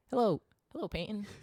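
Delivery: put-on sweet nice voice. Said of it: "And I'm gonna be a, a nice".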